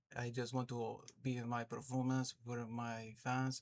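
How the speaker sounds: clumsy, put-on French accent. Talking about his favorite fighter, the speaker does a bad Charles Jourdain impression. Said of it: "that's a terrible impression".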